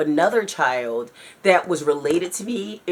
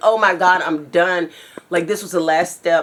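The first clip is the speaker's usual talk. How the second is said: acted-out panicked, freaking-out voice; 4 dB louder than usual. Recounting a dream about their car, retelling freaking out. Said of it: "I'm just like freaking out".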